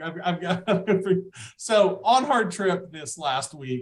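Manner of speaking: talking with words broken by laughter. Starting to tell about last week's trip, laughing while talking. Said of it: "I'm laughing".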